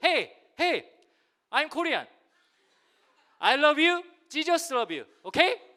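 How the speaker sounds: bold, brash, loud, high-pitched English-sounding shouting.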